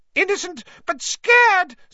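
high, loud squeal. A narrator reads Pettigrew's reply to Lupin, Pettigrew squealing. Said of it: "squealed Pettigrew".

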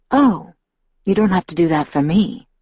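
ordinary delivery

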